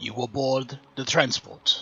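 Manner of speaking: put-on Russian-accented robot voice. Narrating a game, one of two metallic figures speaks to you: wrong accent. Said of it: "that was the wrong accent completely".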